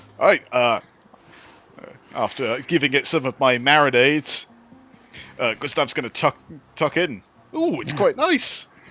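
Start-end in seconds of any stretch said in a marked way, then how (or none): 7.6-8.7 sounding surprised, higher pitch. Tasting dinner in character at a camp: surprised. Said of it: "you sound surprised".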